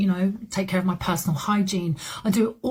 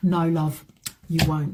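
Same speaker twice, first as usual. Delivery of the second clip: condescending, patronizing, knowing, dismissive tone; 3 semitones lower than usual. Answering imagined young women who think they will cope: condescending. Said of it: "That sounded really condescending and it was meant that way".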